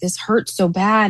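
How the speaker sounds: acted-out crying. Speaker retelling what they said to their mom in bed, imitating crying. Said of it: "I'm crying".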